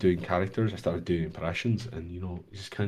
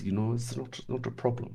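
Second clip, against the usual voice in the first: put-on German accent in English, pitched up; 5 semitones higher than usual. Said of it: "it sounded a lot like this".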